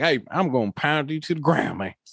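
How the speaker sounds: put-on rural American country accent. Imitating a big guy from the country making a threat: country accent. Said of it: "maybe he's from the country".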